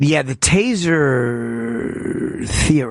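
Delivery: very slow, deliberate, drawn-out delivery. Speaker laying out why the taser theory makes no sense, talking very slow. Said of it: "Why are you talking so slow?".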